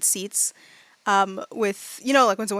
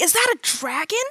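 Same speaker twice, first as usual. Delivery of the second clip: put-on full awestruck childlike wonder, pitched high; 8 semitones higher than usual. Voicing a boy whose composure is lost at seeing a dragon: awestruck eleven-year-old. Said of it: "fully a child going".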